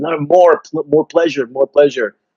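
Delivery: high-pitched, pleading, begging tone. Retelling a scene between two characters in a show, imitating someone begging. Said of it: "And he's begging him".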